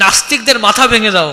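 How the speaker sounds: ordinary talk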